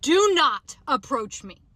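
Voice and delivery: mock deliberate yell, loud, slow, words spaced out. Retelling yelling at a man approaching in a parking lot: imitating her own yell. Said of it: "I literally yelled at him and I said".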